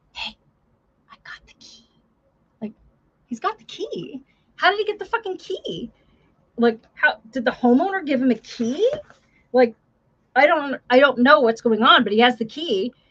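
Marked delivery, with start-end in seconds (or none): 0.1-1.9 very quiet, breathy, barely audible whisper. Retelling a training officer's words at a call: imitating someone speaking very quietly. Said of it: "very quietly him say".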